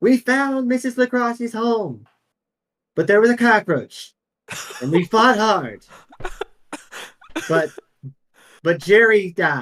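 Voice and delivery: tiny, small, high little ant voice. Describing the scene to the players, the speaker voices the little ant: tiny ant voice. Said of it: "you hear the little ant's voice go".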